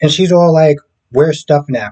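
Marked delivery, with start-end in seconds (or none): 1.1-1.9 put-on voice full of attitude. Retelling how Gabby walks in asking for Stefan: imitating Gabby with attitude. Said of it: "with an attitude".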